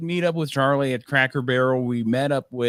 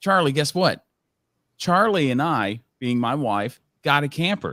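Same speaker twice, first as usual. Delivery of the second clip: bold, self-assured, supremely confident delivery. Retelling how a woman leaned over to Charlie, imitating a confident voice. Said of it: "in just the most confident voice".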